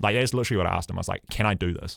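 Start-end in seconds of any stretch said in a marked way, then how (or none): 1.3-2.0 mock earnest, begging pleading tone. Retelling asking the coach before a third attempt: retelling own pleading. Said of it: "just pleading, pleading with him essentially".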